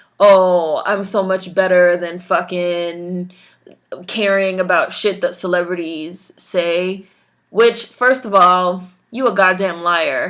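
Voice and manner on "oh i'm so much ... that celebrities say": ordinary talk, nothing marked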